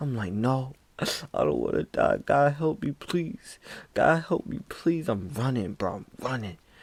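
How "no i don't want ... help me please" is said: desperate, swooping, crying voice, pleading through tears. Speaker retells running from a scream, retelling crying and pleading. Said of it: "I'm just running and I'm crying".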